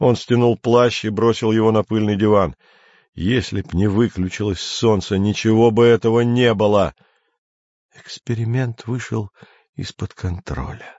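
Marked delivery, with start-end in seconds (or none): 7.9-11.0 soft, quiet, mumbled muttering. The mentor, turning away from Andrei, answers him: muttered. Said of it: "пробормотал наставник".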